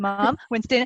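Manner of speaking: imitated American kid accent, mock child voice. Mother imitating how her son talks to her, in a put-on american kid accent. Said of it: "he talks like this at me".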